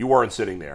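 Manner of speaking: indistinct, low-key, soft mumble under the breath. Retelling what a guy at a swim meet said: imitating someone mumbling. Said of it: "he kinda mumbles".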